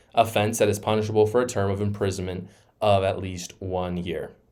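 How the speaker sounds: ordinary talk, nothing marked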